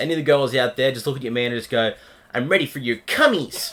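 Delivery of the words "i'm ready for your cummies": fake Japanese anime schoolgirl voice. Showing how to say a line to your man: put-on Japanese anime schoolgirl voice. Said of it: "Like you're a Japanese anime schoolgirl".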